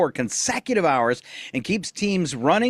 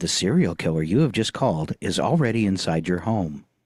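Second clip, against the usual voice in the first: spooky, eerie voice, lower; 12 semitones lower than usual. Recalling a novelty answering-machine message, spooky voice. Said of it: "in a spooky voice".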